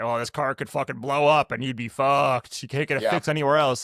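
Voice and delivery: grim, ominous doom and gloom salesman voice. Retelling a salesman's warranty pitch: imitating a doom and gloom sales pitch. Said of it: "the doom and gloom speech".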